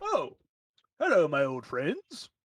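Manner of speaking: put-on voice of an elderly gentleman. Narrating a scene where a guild member looks up as the party walks in, older tiefling gentleman voice. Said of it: "the older tiefling gentleman".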